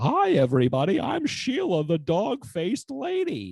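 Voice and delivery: very high, loud, slow, swooping sing-song voice. Retelling a host's stage character, imitating a Mad Hatter-like voice. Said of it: "he basically sounds like the Mad Hatter".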